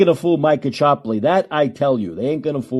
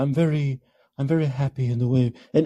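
falsely calm, passive-aggressive tone; 5 dB quieter than usual. Demonstrating the tone while describing it; passive-aggressive calm tone. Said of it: "this very passive-aggressive calm tone".

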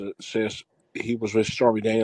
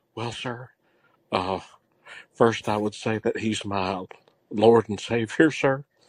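polite, put-on Southern accent. Role-playing a scene where the other speaker plays the lawyer: Jodie Foster impression. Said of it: "If I was Jodie Foster, I'd be like".

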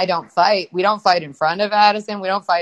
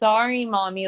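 put-on very sweet voice, quieter; 5 dB quieter than usual. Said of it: "and very sweet".

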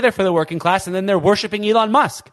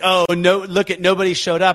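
normal talking voice

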